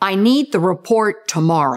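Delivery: declarative falling pitch closing on "tomorrow". Showing a declarative sentence that signals finality, falling pitch on tomorrow. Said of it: "the pitch goes down, signaling finality. Sounds like this".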